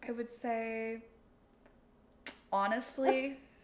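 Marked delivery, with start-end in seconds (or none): 2.5-3.4 the word honestly lifted high in pitch. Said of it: "What's your inflection?".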